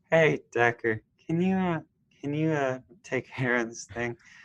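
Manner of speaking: acted worn-out, weary voice, a bit high. Discussing aging actors in a film, imitating Craig T. Nelson sounding tired. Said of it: "he sounded so tired".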